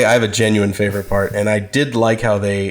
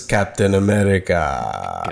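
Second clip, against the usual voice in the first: drawn out, held a beat too long; 3 semitones lower, 3 dB quieter than usual. Quoting how Red Skull says the name: Red Skull voice, held too long. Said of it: "I did love how Red Skull says".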